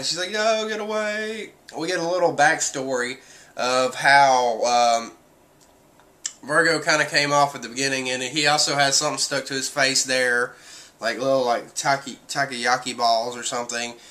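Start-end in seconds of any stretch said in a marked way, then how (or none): 0.3-1.5 high voice on the verge of crying. Retelling a scene where Tashigi is about to cry: imitating Tashigi about to cry. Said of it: "about to start crying".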